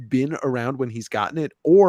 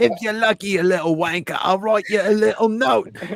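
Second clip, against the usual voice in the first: hammy, pitched-up put-on British accent; 8 semitones higher than usual. Joking around in a group conversation, in a British accent. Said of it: "that was the best British accent I've ever heard".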